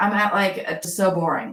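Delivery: ordinary talk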